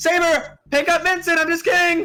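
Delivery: shouting in an acted voice. Voicing a character mid-fight who yells to an ally: yelling in character. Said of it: "she yells".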